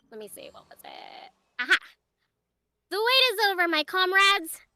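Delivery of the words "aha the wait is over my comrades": sweet cute voice, higher and louder. Performing the character line everybody loved, in a cute character voice. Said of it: "The voice you do for her is so cute".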